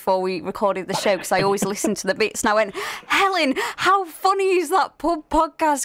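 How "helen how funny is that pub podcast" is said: put-on high, eager, excited shout. Speaker retells calling out to the producer before recording: retelling a shout. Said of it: "I actually shouted to Helen".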